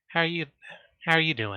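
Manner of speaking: soft, hushed voice. Playing a character, turning to the host's silent daughter, speaking quietly. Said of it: "kind of quietly".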